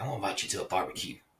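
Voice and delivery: quick, laid-on southern drawl. Recalling how a pastor always talked about barbecues, imitating Pastor Joe Masterson. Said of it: "that's how he talked".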